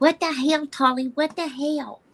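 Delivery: put-on high-pitched cooing baby talk. Showing how the speaker always talks to their dog, in baby talk. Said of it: "I baby talk to my doggy all the time".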